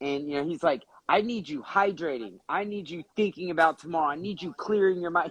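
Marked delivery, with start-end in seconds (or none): 1.1-5.3 firm, stern, fast, pitched-up delivery. Retelling what Jeff said when pestered to help: imitating Jeff speaking sternly. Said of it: "Jeff looks at me very sternly and he goes".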